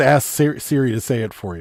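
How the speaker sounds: usual speaking voice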